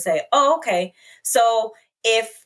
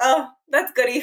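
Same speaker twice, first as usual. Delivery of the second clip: amused tone broken by chuckles throughout; 4 semitones higher than usual. Retelling a father's reply to her news: imitating dad laughing while talking. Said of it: "he starts busting up laughing".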